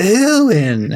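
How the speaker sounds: drawn-out delivery with slight, faint disgust. Showing the right way to say a name, slightly disgusted "erwin". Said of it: "you're supposed to sound really slightly disgusted by it".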